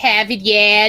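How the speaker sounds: Boston accent impression. Imitating a boarding school roommate: imitating roommate's boston accent. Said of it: "I had a roommate like that".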